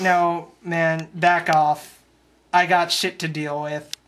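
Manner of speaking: plain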